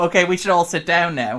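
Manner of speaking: talking through a chuckle. Retelling an actor cracking up during a scene: imitating David Duchovny chuckling. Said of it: "sort of chuckle to himself and go".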